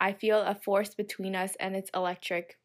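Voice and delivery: ordinary talk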